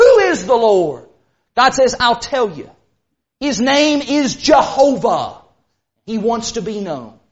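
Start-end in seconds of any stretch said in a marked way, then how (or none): 0.0-1.0 put-on condescending tone. Retelling the story, the speaker voices Pharaoh, mock-condescending. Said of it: "You picture Pharaoh asking that so condescendingly".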